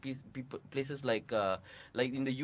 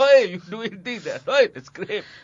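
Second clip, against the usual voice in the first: put-on scolding voice, higher and louder; 8 semitones higher, 16 dB louder than usual. Showing how the director scolds actors for ad-libbing: imitating Lee scolding actors. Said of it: "That's my impression of Lee".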